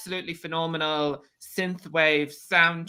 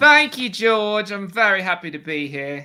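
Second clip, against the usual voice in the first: loud, raised put-on British accent; 3 semitones higher, 5 dB louder than usual. Podcast guest thanking the host after being introduced, James Marsters-style accent. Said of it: "I didn't realize this was James Marston and Buffy for a second with that accent".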